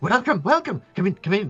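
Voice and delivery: put-on very high, fast, hyperactive old goblin chatter. Telling a story as the old goblin welcomes the visitors in, hyperactive old goblin voice. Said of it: "that old goblin with his rotted teeth and his like slightly hyperactive nature".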